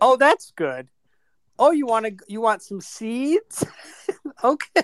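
friendly, high-pitched pet-talk chatter. Teasing a quiet friend, acting out how he talks to his parrot: imitating Dennis talking to his parrot. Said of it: "He's like".

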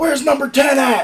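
very high, all-out, top-of-lungs screaming shout. Retelling a locker room moment after a speech: imitating Nate screaming at top of lungs. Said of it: "he screams at the top of his lungs".

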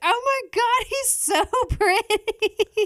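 put-on scream. Retelling the moment they saw his crystal blue eyes, retelling a scream. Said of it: "when I screamed".

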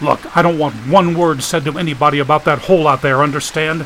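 ordinary delivery, nothing marked

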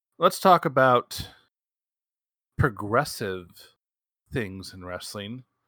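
plainly sarcastic delivery. Introducing a new topic in a conversation: sarcastic tone. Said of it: "you can hear the sarcasm in my tone".

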